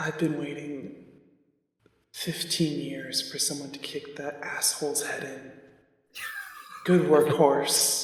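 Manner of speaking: feeble and spiteful tone. Narrating a scene, voicing a second voice from inside, weak and spiteful. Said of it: "weak and spiteful".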